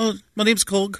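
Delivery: put-on tiny babyish voice, very high and small. Describing Korg from Thor Ragnarok to friends, doing Korg's little baby voice. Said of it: "He's got a little baby voice".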